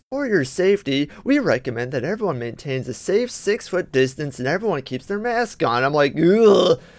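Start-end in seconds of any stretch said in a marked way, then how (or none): 0.1-5.8 syrupy, saccharine-sweet, sugary PA announcer voice. Complaining about store warnings, doing the saccharine-sweet Kroger announcement voice. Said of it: "that saccharine sweet voice it's like".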